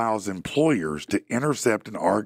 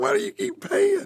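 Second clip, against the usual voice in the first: mock angry, demanding, furious voice, pitched up. Retelling what his wife asked about paying: imitating an angry wife. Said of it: "My wife's mad as hell".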